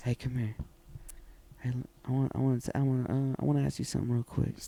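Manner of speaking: seductive, sexy voice, stumbling and stuttering over words. Asked to show how he would say it sexy to her: saying it sexy. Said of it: "show the audience how you would say it sexy".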